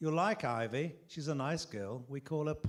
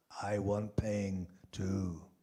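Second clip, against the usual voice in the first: hoarse, low, husky voice; 4 semitones lower than usual. Narrating a woman who grabs you by the throat; husky voice. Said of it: "says in a husky voice".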